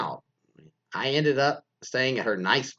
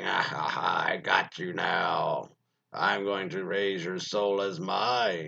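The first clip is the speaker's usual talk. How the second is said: creepy demonic voice, slower; 5 semitones lower than usual. Retelling a story, voicing the daughter who comes in with a butcher knife, in a creepy demonic voice. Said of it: "That creepy voice scared me".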